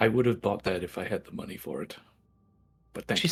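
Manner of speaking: soft, hushed, close whisper. Leaning in to a character's ear in the game: whisper. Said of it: "whisper into her ear".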